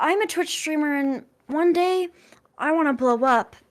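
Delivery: put-on pick-me girl character voice. Introducing a Twitch streamer persona in a pick-me girl voice. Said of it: "I'm gonna do my pick me girl voice".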